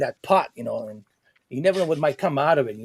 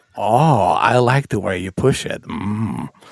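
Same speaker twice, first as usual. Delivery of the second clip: slow, low, loud, drawn-out villain drawl; 6 semitones lower, 6 dB louder than usual. Imitating own imagined words in Joker voice. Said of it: "Joker voice".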